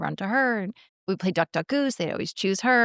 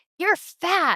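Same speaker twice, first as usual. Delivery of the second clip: put-on very high, jeering kid's shouting voice; 10 semitones higher than usual. Retelling how a kid heckler in the audience yelled: imitating a kid yelling. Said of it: "he keeps yelling at me".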